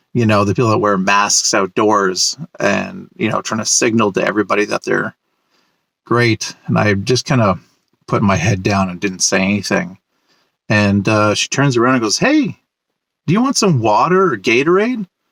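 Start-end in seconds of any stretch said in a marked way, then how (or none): 12.1-15.0 put-on Ontario French-Canadian accent. Retelling what a neighbor asked on the street: imitating a broken Franco-Ontarian accent. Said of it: "broken Franco-Ontarian accent".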